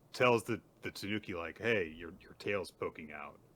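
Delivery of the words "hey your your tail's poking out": ordinary delivery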